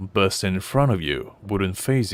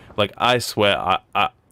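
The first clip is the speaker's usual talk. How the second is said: plain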